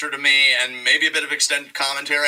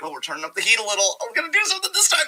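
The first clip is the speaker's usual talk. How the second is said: put-on high, taunting, sarcastic, overeager promo voice; 7 semitones higher than usual. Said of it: "It's like".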